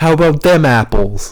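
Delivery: put-on Boston accent. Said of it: "You just did a Boston accent".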